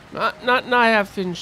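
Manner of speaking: loud, playful scolding tone.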